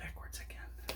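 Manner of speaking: very soft whisper under breath.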